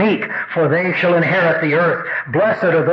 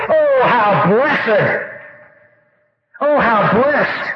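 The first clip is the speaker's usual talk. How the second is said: excited, drawn-out, slow, high-pitched exclamation; 5 semitones higher than usual. Showing how this word cannot be said calmly: exclaimed, not calmly. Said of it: "cannot just say calmly ... It would come across more like this".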